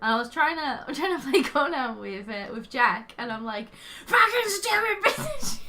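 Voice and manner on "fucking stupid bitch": mock enraged Scottish outburst, very high pitched. Telling a friend how voice chat failed during a game, retelling an angry Scottish outburst. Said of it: "You got so Scottish when you're angry".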